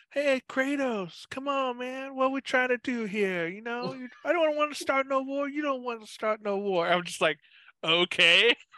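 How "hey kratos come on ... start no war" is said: high, casual, easygoing, laid-back dude voice. Describing a game character's entrance, imitating him as a laid-back dude. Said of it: "he's like".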